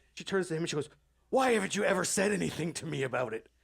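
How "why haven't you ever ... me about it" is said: accusing, angry delivery. Retelling how she turned to the boyfriend: imitating an angry question. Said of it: "she's visibly angry".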